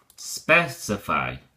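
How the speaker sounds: specify said SPEC-ify, first syllable stressed. Demonstrating the verb form of a vocabulary word, stressing SPEC in specify. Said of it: "the accent changes to the first syllable".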